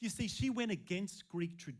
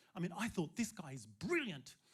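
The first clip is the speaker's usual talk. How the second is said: plain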